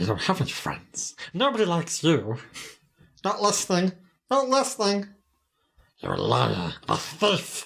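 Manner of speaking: high-pitched swooping creature voice. Speaker trades movie lines with another person, in a Gollum voice. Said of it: "I'm Gollum".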